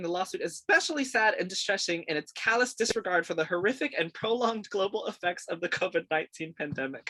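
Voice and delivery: speaking through stifled laughter. Reading Disney's quoted statement about a lawsuit, holding back a laugh. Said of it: "I'm really trying not to laugh here".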